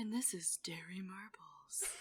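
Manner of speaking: quiet radio DJ voice. Describing the DJ from Parks and Rec, the speaker does a quiet Derry Murbles voice. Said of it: "he talks all, like, quiet".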